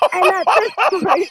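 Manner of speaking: high, loud, excited outburst.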